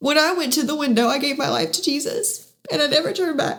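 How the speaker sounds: speaking through tears, tearful, crying through words. Sharing a personal testimony with listeners, crying. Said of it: "I'm so sorry I'm crying".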